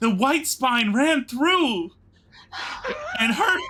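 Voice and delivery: panicked high cry. Role-playing a doctor standing over a wounded man: panicked doctor. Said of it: "looks like I'm a panicked doctor".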